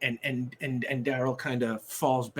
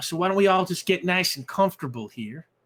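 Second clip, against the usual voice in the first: raised, put-on Southern accent; 6 semitones higher, 6 dB louder than usual. Voicing a character inviting guests to get comfortable: southern accent. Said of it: "I don't know why I'm making him Southern".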